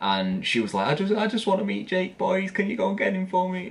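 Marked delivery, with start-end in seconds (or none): 1.0-3.7 put-on very high voice, pleading through tears. Retelling a woman in tears outside the back room door, mimicking talking through tears. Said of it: "like through the tears".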